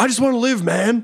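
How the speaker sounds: very high-pitched, whiny dwarf character voice.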